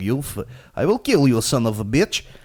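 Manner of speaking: loud, shouted, put-on Russian accent. Retelling a university classmate shouting at kids in an online game, russian accent. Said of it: "he just spoke so much fucking Russian accent".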